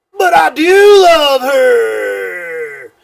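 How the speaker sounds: full-volume belting, very slow and high-pitched. Retelling a stranger's phone call on a bus: imitating someone belting out loudly. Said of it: "belts out as loud as he could possibly can".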